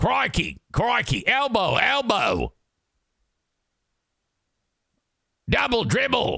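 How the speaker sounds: clumsy, bad Australian accent, pitched very high. Imitating an australian calling from the sidelines, bad australian accent. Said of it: "he sounds like fucking Crocodile Hunter from the sidelines".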